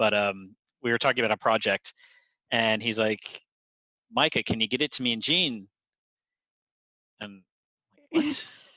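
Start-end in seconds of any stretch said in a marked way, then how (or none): 4.1-5.7 put-on broad Glasgow accent, laid on thick. Retelling a man asking about a project, imitating Stuart's thick Glaswegian accent. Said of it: "he had a really thick accent".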